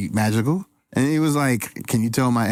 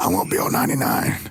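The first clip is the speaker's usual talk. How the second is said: plain everyday normal speaking voice; 5 semitones lower than usual. Retelling what a guest said about not being on episode ninety-nine: imitating Frankie's voice. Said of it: "That's your voice, brother".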